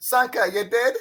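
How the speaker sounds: high, loud mock Jamaican accent. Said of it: "What is this guy Jamaican accent?".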